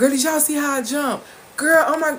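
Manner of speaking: high, loud, dramatic excited exclaiming.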